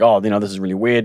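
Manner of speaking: plain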